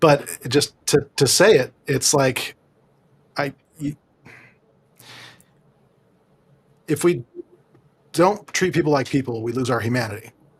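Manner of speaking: emotional, close to tears, near breaking. Explaining why they left their field, the speaker says it: emotional, on the edge. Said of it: "I'm going to get emotional".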